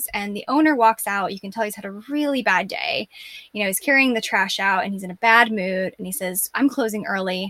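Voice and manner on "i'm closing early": usual speaking voice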